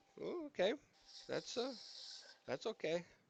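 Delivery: shocked, caught off guard, taken aback. Reacting to hearing how much older she was: shocked. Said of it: "You sound shocked".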